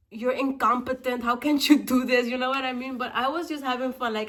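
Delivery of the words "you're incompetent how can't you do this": play-acted, fed-up, mad, angry scolding put-down. Retelling what he said while getting annoyed on a trip: imitating someone mad and angry. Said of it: "he was getting mad and angry".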